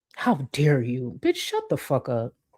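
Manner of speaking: snarky, sarcastic tone. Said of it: "Snarky tone".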